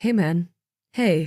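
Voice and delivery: soothing, coaxing, reassuring, comforting lilt. Reading a story where a character calms a frightened man: comforting lilt. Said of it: "he said with what he hoped was a comforting lilt".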